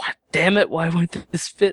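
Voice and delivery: exasperated, frustrated cursing, pitched high. Retelling jamming parts together while being taught: retelling muttered curses. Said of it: "Muttering curses under my breath".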